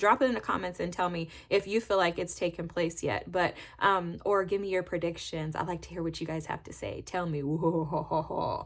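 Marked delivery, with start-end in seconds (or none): 7.0-8.7 spooky, eerie, ghost-story delivery. Asking viewers to drop their predictions in the comments, in a spooky voice. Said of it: "that was my spooky voice".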